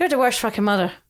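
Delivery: put-on boozy old Irish man voice, drunk-sounding. A mother repeats what Freddie says at bedtime: Freddie's drunk old Irishman voice. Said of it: "sounds like a kind of drunk old Irishman".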